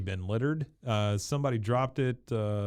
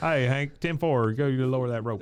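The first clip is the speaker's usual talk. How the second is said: cartoonish put-on way of talking; 2 semitones higher than usual. Retelling how Boomhauer answers Hank: imitating Boomhauer talking fast. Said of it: "he's talking fast".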